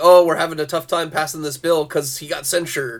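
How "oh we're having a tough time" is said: ordinary delivery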